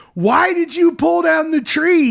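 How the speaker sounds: mock shrieking, upset yell, very high. Recapping a story, acting out Victor screaming at Kenny: retelling Victor's scream at Kenny. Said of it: "He's screaming at Kenny".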